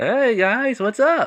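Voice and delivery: high, loud calling-out voice.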